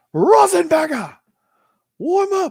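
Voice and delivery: put-on very high, very loud, shrill British accent. Redoing the coach's warm-up call after being asked for higher pitch: British-accent Mike Norvell impression. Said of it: "I just got British".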